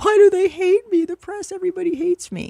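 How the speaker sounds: very high, tearful sobbing voice. Describing the show they want to see: imitating Meghan Markle crying. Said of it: "she's crying in Harry's lap, like".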